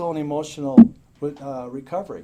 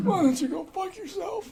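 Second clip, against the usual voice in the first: high, raspy mock smoker's voice. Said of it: "she had this smoker's voice".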